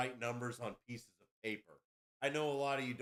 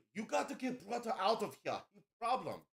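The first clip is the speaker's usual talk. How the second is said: mock piercing, very high-pitched, shrill yelling; 9 semitones higher than usual. Retelling how Feng Li yelled to get the brother out: imitating Feng Li yelling. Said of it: "yelling at me like".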